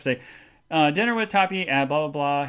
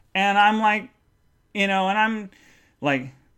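normal talking voice

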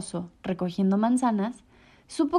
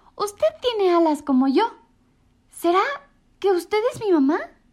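high-pitched exclamation; 8 semitones higher, 3 dB louder than usual. A young winged character meets a penguin and exclaims to her. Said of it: "exclamó".

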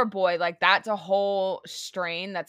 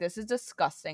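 mock furious, angry, fed-up outburst; 6 dB quieter than usual. Retelling finding a shoe print in a cleaned bathroom: imitating own angry voice. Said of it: "I was so mad".

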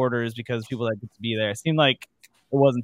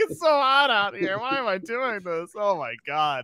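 very high, blubbering, fake tearful wail; 9 semitones higher than usual. Retelling sitting at lunch during hot high school two-a-days: mock crying. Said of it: "sitting at lunch, like, crying".

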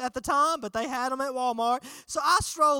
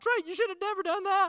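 high, tearful voice, crying and angry at once; 7 semitones higher than usual. In the car, retelling what the speaker's crying mom said: imitating crying but mad. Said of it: "she's crying, but she's mad at the same time".

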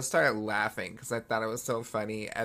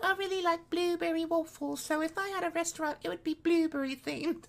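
very high voice throughout. Retelling an interview, imitating Mia Goth's speaking voice. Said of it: "She's like".

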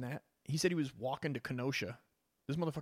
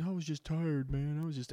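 whining like a crybaby, whiny and pleading; 2 semitones higher than usual. Acting out what a man caught breaking into a car says, imitating someone whining. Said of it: "he's fucking whining like a bitch".

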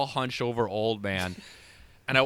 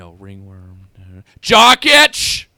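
very loud, blurted-out shout; 5 semitones lower, 17 dB louder than usual. Recounting a man in a small-town grocery store: retelling a loud yell. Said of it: "very loudly in small town grocery store just yelled out".

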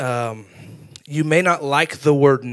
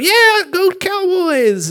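put-on pumped-up, very high, swooping cheering yell; 5 dB louder than usual. Describing cheering for the cowboys in the living room: retelling a yell. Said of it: "I'm yelling in my living room".

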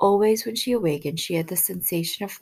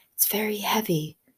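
trembling whisper, higher; 3 semitones higher than usual. Narrator reads the servant's answer to Jordan's question, in a trembling whisper. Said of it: "the servant whispered, still trembling".

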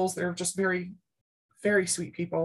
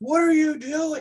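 furious scream at the top of the lungs, very high, loud; 9 semitones higher, 5 dB louder than usual. Retelling a rugby coach storming over, imitating furious screaming. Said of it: "starts screaming at us and at the top of his lungs".

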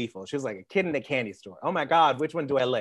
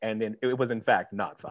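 storyteller narrator voice; 3 semitones lower than usual. Speaker recounting something they watched, in the narrator voice. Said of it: "the narrator voice goes like".

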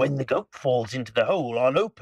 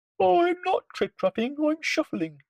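very small, tiny, very high-pitched little voice. Pushed onto the pirates' plank, the Troll answers Hank Chief, very small voice. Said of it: "said the Troll in a very small voice".

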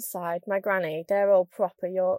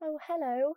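higher, posh southern voice. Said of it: "people down south".

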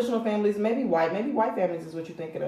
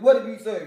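mock, deep man's bass voice. Imitating the child's father scolding, imitating a man's bass voice. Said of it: "but he's saying it with bass in his voice".

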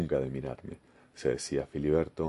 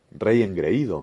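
loud, raised, shouted cry in a witch voice; 4 semitones higher, 6 dB louder than usual. A witch, revealing her true identity, turns on the king: shouted. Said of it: "gritó".

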